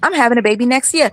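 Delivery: mimicked same-every-time cadence. Imitating how she says a line the same way every interview: imitating her same-every-time cadence. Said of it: "she says it the same way every interview".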